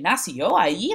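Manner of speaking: play-acted skeptical, doubting, challenging tone. Describing a woman's speech in a picture, mock-skeptical, challenging tone. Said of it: "the intonation of her speech is one of uh, skepticism, where she's really challenging".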